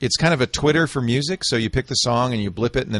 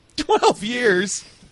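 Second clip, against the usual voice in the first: words breaking into laughter, very high pitch; 11 semitones higher than usual. Reacting to the news that a game project ended, laughing while talking. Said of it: "I'm sorry. I'm not gonna laugh".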